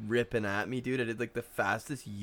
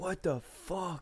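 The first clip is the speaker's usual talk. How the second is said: play-acted high, furious, pissed-off outburst; 8 semitones higher, 4 dB quieter than usual. Speaker retells their dad getting out of the car after the crash; mock-furious. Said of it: "I never saw him like that pissed".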